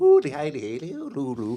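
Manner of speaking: mumbled sing-song broad Irish nonsense syllables. Retelling what an Irish foreman on a building site sounded like: imitating an Irish foreman's gibberish. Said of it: "he'd walk around the place just going".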